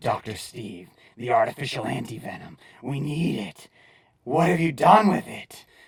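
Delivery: scary put-on monster voice. Explaining comic speech bubbles, showing how Venom might sound: scary Venom voice. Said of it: "His voice may sound something like".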